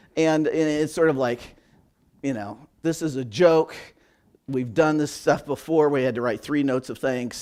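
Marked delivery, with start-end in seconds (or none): none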